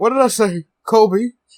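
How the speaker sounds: put-on aged old-timer voice. Imagining what he'll say in a later episode, in an old Hank Hill voice. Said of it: "I don't know why I sound more old".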